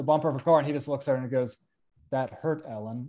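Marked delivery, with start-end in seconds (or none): 2.1-3.1 put-on dejected voice, quieter and slower. Speaker recounts a scene where Clark answers Ellen, imitating Clark's dejected line. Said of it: "So he's so dejected".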